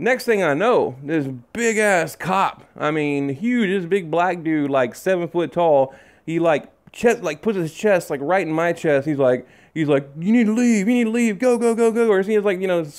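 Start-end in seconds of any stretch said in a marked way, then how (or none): 10.2-12.1 high-pitched, aggressive screaming voice. Recounting a huge cop ordering the speaker to leave, retelling a cop screaming. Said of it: "he's screaming something at me".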